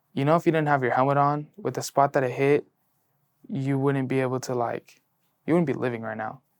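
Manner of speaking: normal talking voice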